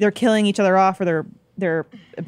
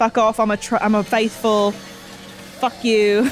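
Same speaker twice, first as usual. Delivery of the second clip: mock angry, hostile retort; 2 semitones higher than usual. Imitating Australian contestants who hate each other: imitating hostile contestants. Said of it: "hate each other".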